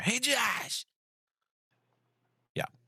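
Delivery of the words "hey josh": high-pitched scream, sudden out of nowhere. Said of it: "John will grab him and scream".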